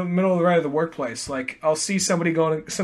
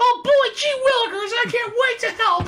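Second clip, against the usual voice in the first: very high, squeaky, over-eager gee-whiz voice. Acting out the character Wally West offering to help: Wally West voice. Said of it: "Wally West just really comes across as".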